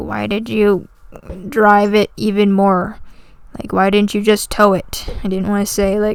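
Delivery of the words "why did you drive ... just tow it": frustrated, exasperated, fed-up father voice. Retelling a phone call with dad about the car: imitating a frustrated dad. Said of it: "he's frustrated".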